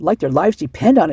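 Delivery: plain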